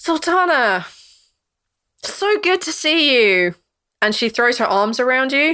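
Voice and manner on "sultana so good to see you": put-on very drunk-sounding speech, higher. Voicing a character who greets sultana with a hug: very drunk. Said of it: "She is very drunk".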